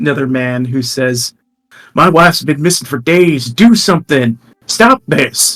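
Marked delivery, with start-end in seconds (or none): 1.9-5.6 loud, shouting, yelling voice. A man in the crowd calls out to Sildar, shouting. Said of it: "they're all kind of shouting to Sildar".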